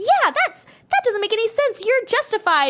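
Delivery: very high-pitched, acted, riled-up angry outburst. Retelling a partner's reply to her venting: imitating someone angry. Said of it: "equally angry and be like".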